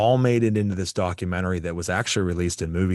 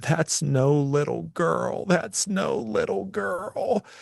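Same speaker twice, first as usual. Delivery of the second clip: crying out, very high-pitched and distraught; 10 semitones higher than usual. Telling a ghost story, quoting what a man said after something left him, retelling a man's crying. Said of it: "he started crying, saying".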